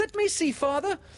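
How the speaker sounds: very high begging tone. Michael speaks up after Windy exclaims, eager begging. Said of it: "Michael begged eagerly".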